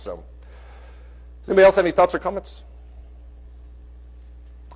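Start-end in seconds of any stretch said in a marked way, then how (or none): 1.4-2.6 talking fast, rushed. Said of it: "I'm talking fast because I feel like all morning I've been running late".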